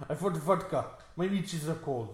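put-on Russian accent. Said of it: "do you think that's a pretty good Russian accent?".

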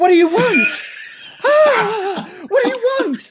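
very high, shrill, loud, terrified screech. Voicing a terrified mother who screams at strangers: screaming in character. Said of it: "she just screams out".

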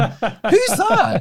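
very high, baffled, laughing. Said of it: "I was looking at it going".

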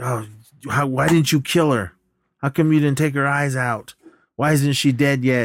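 play-acted loud yelling voice. Retelling a movie scene where the mother yells at her son: imitating a mother yelling. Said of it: "And she starts yelling at him".

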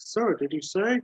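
high, tinny radio voice. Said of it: "the tinny response".

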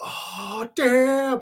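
mock amazed outburst. Retelling how the crowd reacted when Daredevil appeared: imitating a wowed crowd. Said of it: "the crowd was like".

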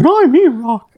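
put-on squeaky cartoon voice. A podcast co-host introduces himself at the show's opening; Mickey Mouse voice. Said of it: "that's E-Rock's lame attempt at a Mickey Mouse impression".

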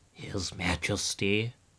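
humbled, cowed voice. The imperial physician, leaving the king's bedroom, begins his report in a bowed-down voice. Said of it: "he began in a very bowed down voice".

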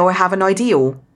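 Somerset accent, L added to end of idea. Showing how people in Somerset add an L: Somerset accent. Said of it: "my original accent, where I'm from in Somerset".

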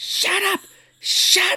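mock exasperated, fed-up scream, very high. Retelling a scene where she drags Ash along and screams at him, retelling her screaming. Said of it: "she's screaming at him".

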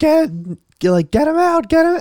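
mock high, shrill, frantic, panicked screaming. Retelling how everyone reacted when he landed among the sharks: imitating people screaming. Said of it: "everyone is just screaming".

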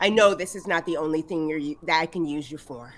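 low mutter, half to oneself, under the breath. Voicing a character speaking to her axe: muttering under her breath. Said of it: "under her breath".

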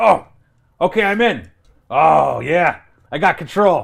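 loud, high PA broadcast voice. Recounting a scene where Qualish's voices come over the PA: Qualish voice over PA. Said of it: "Qualish's voices coming over the PA system".

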